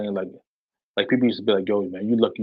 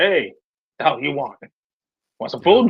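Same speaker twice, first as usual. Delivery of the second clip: mimicked voice with attitude, higher pitch; 5 semitones higher than usual. Retelling how his dad greeted a visitor: imitating his dad's attitude. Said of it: "with an attitude".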